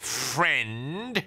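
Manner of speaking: snarled, stretched-out, drawn-out word. Mr. Parker answers Ben while pushing open the front door, snarling. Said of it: "snarled Mr".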